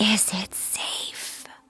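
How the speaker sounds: quiet, breathy, hushed whisper. Looking at the gremlins and asking them, a quiet whisper. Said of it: "I just quietly whisper".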